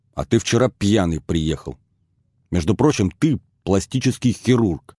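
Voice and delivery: plain reading voice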